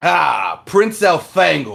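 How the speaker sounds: very loud, booming alien voice. Retelling a story, a new Andalite speaks inside listeners' heads, booming alien voice. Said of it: "you guys hear a booming voice in your head".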